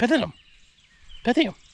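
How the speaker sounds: very high-pitched voice with a lisp. Joking about how Mike Tyson would say a word: Mike Tyson impression. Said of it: "Mike Tyson say".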